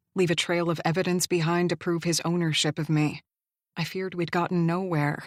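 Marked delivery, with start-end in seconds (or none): none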